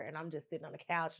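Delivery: ordinary delivery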